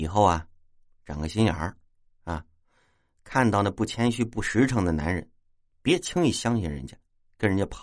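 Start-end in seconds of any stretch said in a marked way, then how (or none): none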